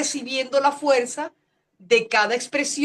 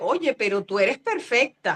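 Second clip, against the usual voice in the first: half-sarcastic tone. Retelling a remark someone once made: imitating a half-sarcastic tone. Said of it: "en un tono como medio sarcástico".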